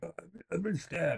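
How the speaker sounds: acted choking, high, gurgled speech. Retelling a video of a stabbed kid: imitating someone gurgling. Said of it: "he's gurgling".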